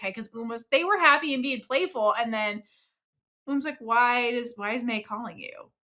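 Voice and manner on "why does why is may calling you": imitated hurt voice, lower and quieter. Retelling a character's question after being playful: imitating a hurt voice. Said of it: "she sounds hurt".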